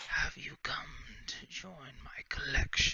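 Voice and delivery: soft, close, intimate whisper. Voicing an unseen creature that whispers in a player's ear: whispering in your ear. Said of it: "a voice whisper in your ear".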